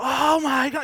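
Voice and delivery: short, high-pitched burst of screaming. Retelling a door accident: retelling a scream. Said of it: "we both just, like, scream".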